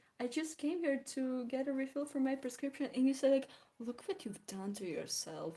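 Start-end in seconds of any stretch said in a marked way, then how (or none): 3.8-5.6 soft, patronizing, condescending tone. Retelling what a woman said during a prescription refill, mimicking a condescending tone. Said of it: "in this condescending tone of voice".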